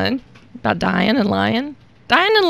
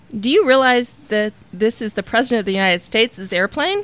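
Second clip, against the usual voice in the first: plain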